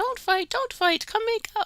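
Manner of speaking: very high, loud little gnome voice. Retelling what a gnome told a fighting couple, in a gnome voice. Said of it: "that's my gnome voice".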